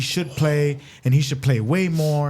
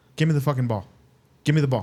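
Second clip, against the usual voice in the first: put-on harsh coach voice. Retelling what a baseball coach said to a pitcher: imitating a harsh coach. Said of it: "is that harsh?".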